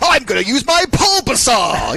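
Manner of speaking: dramatic, high, swooping cartoon announcer voice. Speaker demonstrates a voice like one used on a show, Pokémon cartoon voice. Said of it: "similar to the voice that they use on um uh you know on Pokemon".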